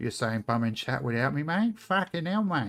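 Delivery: put-on thick Australian accent, laid on heavily. Streamer voicing a chat message, Pixie in strong Australian accent. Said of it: "Pixie's got like a strong Australian accent".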